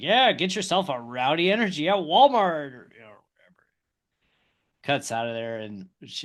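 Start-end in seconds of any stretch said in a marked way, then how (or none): 0.0-2.7 blatant, shameless, loud, pitched-up, obnoxious hard-sell tone. Retelling a driver's interview plugging an energy drink: imitating Kyle Busch obnoxiously promoting. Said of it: "very blatantly just being obnoxious, just promoting".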